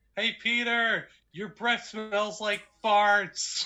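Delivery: put-on very loud, high-pitched, childish jeering and taunting tone. Shouting up at a character: childish playground insults. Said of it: "winging the most childish playground insults".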